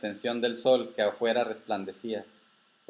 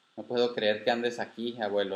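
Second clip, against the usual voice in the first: plain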